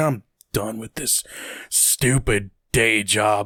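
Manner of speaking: sarcastic, dry, gloomy, mopey voice. Describing a game character from a DLC: sarcastic General Knox voice. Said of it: "he's just this kind of sarcastic".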